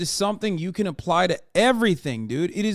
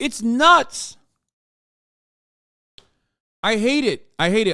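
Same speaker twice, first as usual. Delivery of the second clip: furious, angry yelling outburst; 3 semitones higher, 4 dB louder than usual. Speaker, in the middle of a rant, yelling angrily. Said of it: "I'm yelling because it pisses me off".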